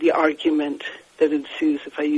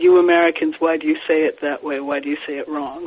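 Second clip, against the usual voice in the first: usual speaking voice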